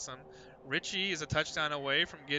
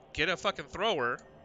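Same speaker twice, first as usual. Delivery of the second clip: ordinary delivery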